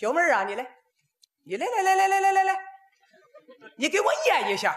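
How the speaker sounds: put-on Dalian accent. Retelling a friend from Dalian calling a waitress: Dalian accent. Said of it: "我这大连的朋友啊，喊这服务员".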